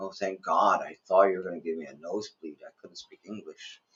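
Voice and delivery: put-on grateful, relieved exclamation. Retelling how locals react once he speaks Filipino: imitating relieved locals. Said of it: "then they relax, like".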